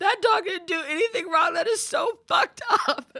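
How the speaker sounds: mock very loud, shrill, very high distraught cry. Retelling her childhood reaction to a sad film scene: imitating her past distraught self. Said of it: "I remember getting emotionally distraught".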